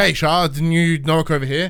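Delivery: normal talking voice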